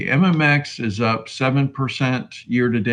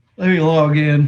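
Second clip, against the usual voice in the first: yawning while speaking, louder and higher; 5 semitones higher, 5 dB louder than usual. Host logging in for viewers, past bedtime; yawning while speaking. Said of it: "I'm yawning".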